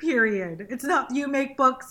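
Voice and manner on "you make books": plain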